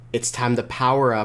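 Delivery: ordinary delivery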